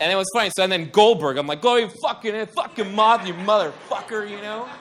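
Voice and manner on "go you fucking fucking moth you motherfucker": mock furious cursing outburst, fuming. Retelling cursing at a moth: imitating his own angry yelling. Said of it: "So mad at him the whole night".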